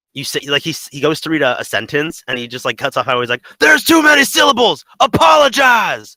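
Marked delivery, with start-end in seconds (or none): 3.6-6.0 full-throated, shrill scream, very high and loud. Describing how he cuts off a sentence while reading his lines: imitating a scream at top of lungs. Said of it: "screams it at the top of his lungs".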